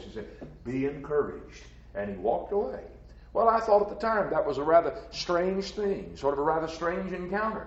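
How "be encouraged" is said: smooth voice, quieter. Recalling what Carl said after grabbing his arm, in Carl's smooth voice. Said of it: "that smooth voice".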